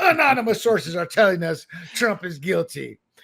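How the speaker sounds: sarcasm laid on thick. Mocking a newspaper's anonymous sources: mock sarcastic tone. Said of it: "I'm being sarcastic as I say it".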